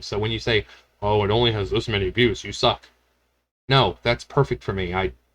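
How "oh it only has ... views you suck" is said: plain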